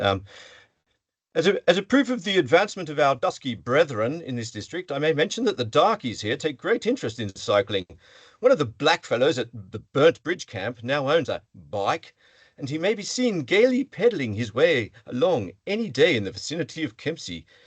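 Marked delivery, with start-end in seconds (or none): 1.7-17.4 swooping settler colonial reading voice. Reading an old passage aloud to an audience, in a settler colonial voice. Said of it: "my best um, settler colonial voice".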